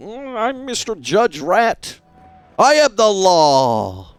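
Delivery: pompous, self-important judge voice, slow, high. Imagining being a cool judge rat character: imitating a self-important judge. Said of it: "this kind of guy who's just like".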